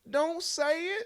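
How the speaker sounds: very high-pitched, squeaky voice. Retelling a line they once said as a homage: squeaky voice. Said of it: "So I had like the squeaky".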